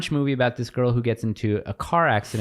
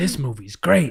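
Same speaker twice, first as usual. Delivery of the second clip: bad put-on gravelly tough-guy voice, pitched higher; 4 semitones higher than usual. Retelling a call-in about Dune: horrible Al Pacino impression. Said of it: "it's a horrible Al Pacino".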